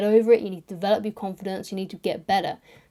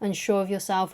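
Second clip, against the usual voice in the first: normal talking voice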